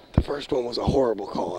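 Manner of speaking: hushed, secretive half-whisper. Commentating on a referee call, half-whispering. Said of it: "I just have to whisper it".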